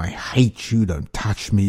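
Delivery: plain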